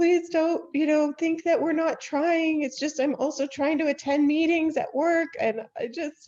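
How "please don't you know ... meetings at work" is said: acted-out, tearful, high, raised sobbing voice. Retelling a call with a teacher, imitating her own sobbing plea. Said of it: "I just started sobbing and said".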